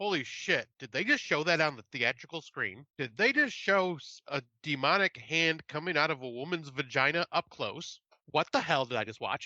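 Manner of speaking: plain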